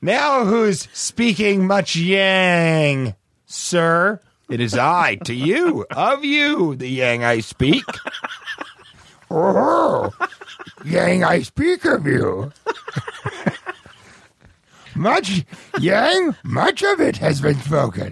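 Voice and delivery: swooping creature voice, smoker's rasp, cough-rasp on words. Doing an impression of Kermit turning into Yoda: Yoda voice with smoker's cough. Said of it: "that's like Yoda with like a smoker's cough".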